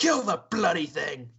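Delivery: loud, snarling, growling orc voice. Narrating a game, the speaker voices an orc growling at a party member. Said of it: "he growls at uh, growls at Imped and says".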